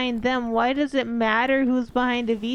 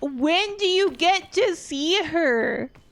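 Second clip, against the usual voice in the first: put-on angry voice, pitched higher; 6 semitones higher than usual. Retelling a father's outburst about a VTuber: imitating Papa Paws angry. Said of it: "So angry".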